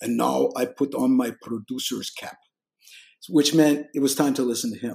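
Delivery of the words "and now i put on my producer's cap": put-on Turkish accent, slow. Retelling a man's recurring joke, in his Turkish accent. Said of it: "he had a Turkish accent".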